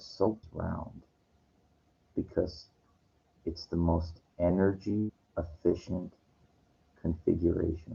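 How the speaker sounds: very quiet, slow, calm, low, hushed, even with pauses. Retelling what he told a woman while a guy watched: retelling a slow, calm delivery. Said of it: "I said it real slow and really calmly".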